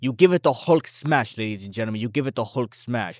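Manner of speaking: playful fake Russian accent. A comic book news host asks viewers to hit like, in put-on russian accent. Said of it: "I just put on a Russian accent".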